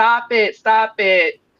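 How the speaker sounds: acted-out screaming. Speaker recalls being little and sitting there: retelling a childhood scream. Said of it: "sitting there screaming".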